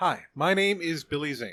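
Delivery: put-on flat neutral American accent. Showing another speaker how the impression goes, in a Billy Zane voice, blank neutral American. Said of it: "the blank neutral American".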